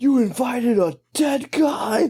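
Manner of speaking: high-pitched, shrill, outraged shout, acted out. Retelling how one guy yelled at him, retelling someone yelling. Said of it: "they're literally yelling at him".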